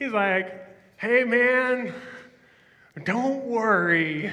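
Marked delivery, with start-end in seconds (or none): 1.0-4.3 slow, raised-pitch hippie drawl. Retelling Jesus's teaching on worry as if Jesus were a hippie: Jesus as a hippie. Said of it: "he's kinda like a hippie".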